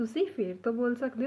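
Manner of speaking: plain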